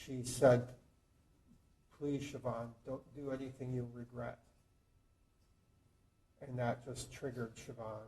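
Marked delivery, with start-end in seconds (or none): 2.0-4.4 calm but fearful voice, much quieter. Recounting his wife's words to siobhan just before he was shot, retelling a calm but fearful plea. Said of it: "in a calm, but you could tell that there was fear in her voice".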